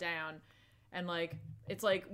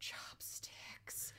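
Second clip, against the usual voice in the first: creepy, soft, unvoiced whisper. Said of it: "And he's just whispering".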